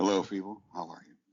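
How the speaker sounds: booming, very loud full radio announcer delivery. Opening with a greeting, speaker puts on a full radio voice. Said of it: "I'm just doing my doing my full radio voice".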